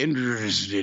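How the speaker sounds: put-on slurred speech. Show how a man slurred a word after more than ten in a row, imitating slurred speech. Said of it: "he slurred it".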